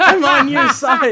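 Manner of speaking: put-on yelling. Retelling a sketch where a man on stage keeps yelling: imitating someone yelling. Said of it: "and he's just yelling".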